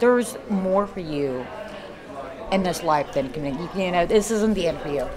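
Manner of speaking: ordinary talk, nothing marked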